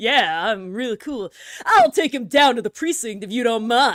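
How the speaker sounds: laid-back cool-guy voice. Recalling a character voice during a voiced game session, in Jacques Portsman voice. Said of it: "I need to like remember how I did Jacques Portsman voice".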